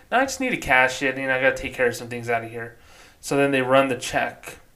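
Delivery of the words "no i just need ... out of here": normal talking voice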